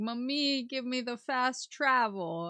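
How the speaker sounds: put-on house cat voice, slow, drawn-out. Retelling how the cat calls out from the bed: imitating a cat hollering. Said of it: "she'll holler at me".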